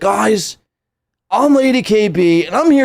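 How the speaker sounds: put-on chad bro voice. Mocking how someone introduces herself in a chat room, Lady KB in a Chad voice. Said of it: "she's like".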